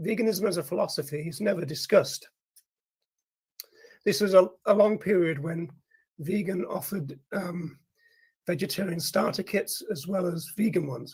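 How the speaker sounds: voice giving out. Speaking at length as their voice starts giving out, losing voice. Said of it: "I'm losing it".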